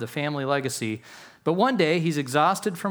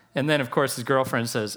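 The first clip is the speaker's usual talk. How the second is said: usual speaking voice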